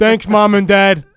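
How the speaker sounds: put-on loud, drawn-out, spoiled entitled rich-kid voice.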